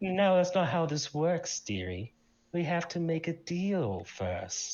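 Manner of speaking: chuckling, amused female demon voice. Voicing a summoned female who answers the summoner: chuckling female demon voice. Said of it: "a female voice just, like, chuckle".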